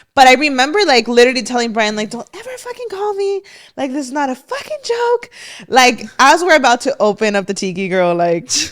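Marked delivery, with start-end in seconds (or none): 2.1-5.3 mock screaming, very high-pitched and shrill. Retelling telling Brian not to call again: imitating own past screaming. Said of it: "I'm screaming at Brian".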